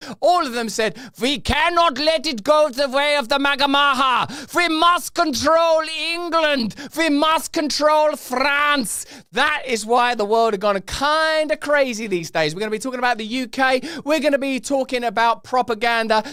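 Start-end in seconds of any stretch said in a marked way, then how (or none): 1.2-9.1 deliberate, slow, high-pitched, put-on German accent. Retelling what the organizations all said, in a put-on German accent. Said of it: "I don't know why I'm doing a German accent".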